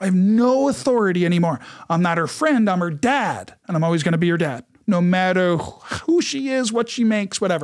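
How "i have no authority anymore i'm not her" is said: plain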